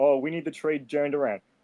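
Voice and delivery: mock, dripping, know-it-all sarcastic outburst. Mocking fans who overreact to an injury: imitating fans sarcastically. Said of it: "he's being sarcastic".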